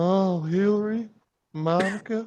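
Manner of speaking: bad put-on voice, smooth and quiet. Joking about a Clinton series with friends: bad Bill Clinton impression. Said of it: "It was a really bad impression".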